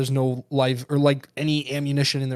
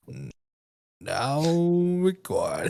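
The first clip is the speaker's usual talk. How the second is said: put-on slow, swooping robot voice; 3 semitones higher than usual. Acting out a friend slowly starting a recording: imitating Craig's slow robot voice. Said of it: "and he's like".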